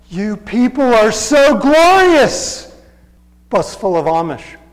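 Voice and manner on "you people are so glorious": slow, higher, louder deranged woman's voice. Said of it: "Her next statement was".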